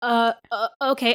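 flustered, hesitant, stammering. Retelling a bully's reply after being calmly answered: imitating a thrown-off stammer. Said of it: "she was so thrown off".

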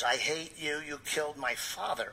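put-on woman's voice. Retelling a night when another spirit suddenly spoke up: spirit speaking in woman's voice. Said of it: "speaks in a woman's voice and says".

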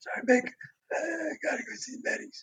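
faint, barely audible whisper. Retelling how a sick coworker who could barely speak talked: imitating a barely audible voice. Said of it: "this is the way he's talking".

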